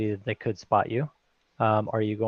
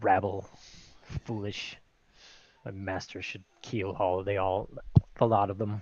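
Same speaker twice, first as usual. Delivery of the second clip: grumbled, muttered under the breath, much lower and quieter; 2 semitones lower, 5 dB quieter than usual. A character walks away from the crew, grumbling under his breath. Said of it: "under his breath saying".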